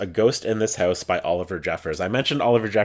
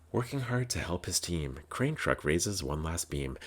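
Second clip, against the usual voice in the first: hushed, very quiet, soft bedtime storybook reading voice; 3 semitones lower, 12 dB quieter than usual. Describing a bedtime book, the speaker reads a passage in a soft bedtime reading voice. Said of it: "put on that kind of soft reading voice".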